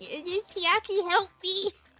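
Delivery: very high, silly, squealing anime-style voice. Talking about a game, doing a stupid Hajime voice. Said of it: "I wanted to do a stupid Hajime voice".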